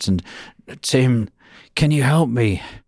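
put-on gravelly voice. Speaker retells a phone call, imitating Kay's gravelly voice. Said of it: "this gravelly voice".

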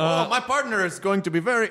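put-on French-Canadian accent. Playing good cop, bad cop with a partner, French-Canadian accent. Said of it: "I'm doing French-Canadian accent".

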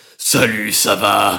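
loud voice of a bigger monster. Talking about dubbing work, the speaker demonstrates a big monster voice. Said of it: "des monstres un peu plus gros".

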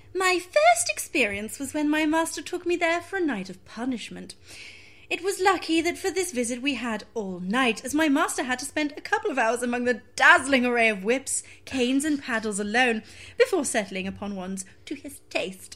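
very prim, prissy, proper voice. Reading aloud someone's written account of a dungeon visit in a very prim voice. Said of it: "You have to do it in the most prim voice possible".

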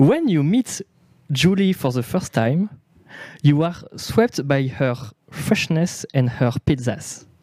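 French accent in English. Reading a text aloud in English: French accent in English. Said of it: "Les gens se moquent de ton accent".

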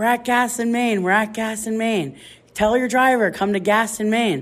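high-pitched, urgent, frantic yelling. Retelling screaming directions to a late wedding party, re-enacting own screaming. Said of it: "I'm screaming".

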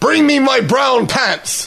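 shrill, very high bellowing voice. Narrator reads the pirate captain's order to his silent men: bellowing.

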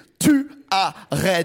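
tu arrêtes, each syllable punched apart. Quoting her, where every blow is one syllable: each syllable of 'tu arrêtes' hit separately. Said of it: "chaque coup est une syllabe".

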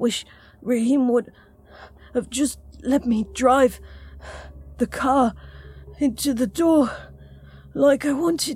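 slow, between deep breaths. Narrating a tired man answering a woman after getting them in: slow, between deep breaths. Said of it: "Jamie spoke slowly between deep breaths".

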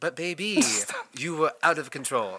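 terrible, exaggerated put-on French accent. Quoting what he said, in a terrible french accent. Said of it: "I'm going to do a terrible French accent".

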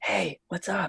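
soft stage whisper. A performer showing how they whisper on stage, in a stage whisper. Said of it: "if I'm whispering on stage, I'd be like".

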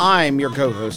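emphasis landing on the word "I'm". Introducing himself as co-host of a show, stress on I'm. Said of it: "I put the emphasis on I'm".

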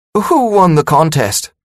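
high, hopeful voice cracking and breaking. Meek asks Culpepper a question, voice breaking with hope. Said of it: "voice breaking with hope".

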